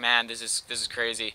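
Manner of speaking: plain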